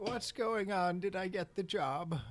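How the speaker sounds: put-on high, elderly old man voice. Taking over a character for the encounter, in an old man voice. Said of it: "Like an old man voice".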